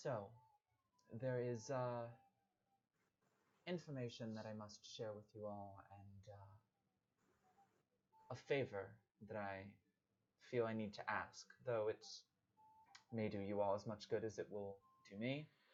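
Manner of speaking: soft, quiet, hushed whisper. Narrator voicing a character who turns to address the group, quiet whisper. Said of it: "in like a quiet uh, whisper".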